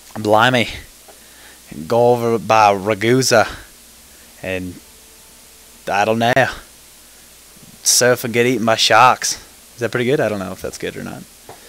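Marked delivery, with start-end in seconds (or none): 0.2-9.4 put-on Australian accent, loud and slow. After saying they lack a Russian accent, trying an attempted Australian accent. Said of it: "I try to have a Australian accent".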